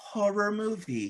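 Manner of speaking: mock innocent sweet voice. Retelling a soap scene, imitating Charity's doe-eyed voice. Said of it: "put on the, like, doe-eyed voice".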